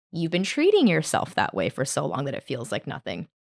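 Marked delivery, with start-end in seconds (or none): none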